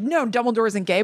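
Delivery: ordinary talk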